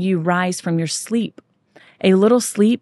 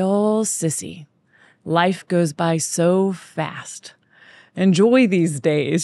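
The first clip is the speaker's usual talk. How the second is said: very slow, deliberate, drawn-out tone. Retelling what a man who worked for the speaker's dad said at school pickup, slow tone. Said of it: "he's talking in his slow tone".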